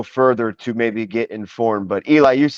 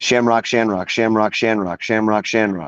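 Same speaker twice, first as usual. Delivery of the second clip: said three times in quick succession. Saying a name three times fast after being asked: said three times fast. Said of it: "Say that three times fast".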